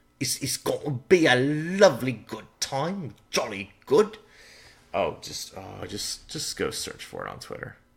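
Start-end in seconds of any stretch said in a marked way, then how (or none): 0.2-4.2 put-on Cockney accent, pitched up. Talking about the new Pokemon games set in England, the speaker jokes in a mock Cockney accent. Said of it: "Prepare your Cockney accents".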